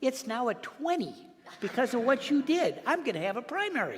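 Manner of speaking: joking, teasing, good-humoured tone with a light, high lift. Retelling a colleague's joking complaint after grabbing lapels: imitating Kweisi Mfume saying it smiling. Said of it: "he said that with, obviously, with a big smile".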